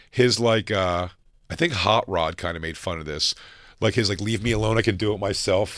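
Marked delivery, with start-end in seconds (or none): 4.2-5.8 mock crying, acted. Retelling an over-the-top movie scene: imitating Robert Downey Jr crying. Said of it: "crying and".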